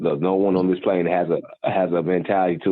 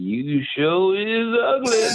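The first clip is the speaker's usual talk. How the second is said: very high, very slow, drawn-out put-on drunken drawl; 13 semitones higher than usual. Retelling a funny movie scene: imitating a drunken stupor. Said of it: "she in that drunken stupor and she's like".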